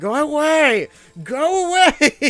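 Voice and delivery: very high-pitched, very loud yelling. Retelling yelling at people who couldn't hear, retelling own yelling. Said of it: "I'm yelling at them, like".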